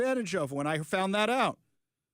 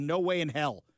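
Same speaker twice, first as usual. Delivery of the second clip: normal talking voice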